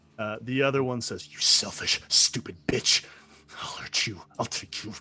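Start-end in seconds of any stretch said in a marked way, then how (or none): 1.3-4.9 venomous, hateful, vitriolic snarling tone. Voicing the other fruit, vitriolic and hostile. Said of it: "Just like this vitriolic thing".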